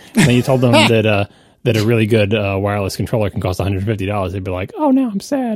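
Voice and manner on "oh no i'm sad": put-on childlike voice, much higher and slower. Imagining a co-host's childhood self hearing a price, speaking as him: imitating young Casey. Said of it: "that's an eerily accurate impersonation".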